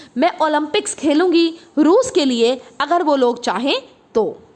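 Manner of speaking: ordinary talk, nothing marked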